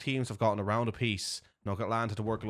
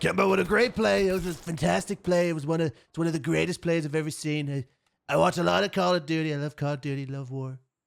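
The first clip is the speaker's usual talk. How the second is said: overdone politician voice, loud, high-pitched half scream; 6 semitones higher, 5 dB louder than usual. Casting a great play for viewers: Donald Trump impression. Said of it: "Donald Trump impression".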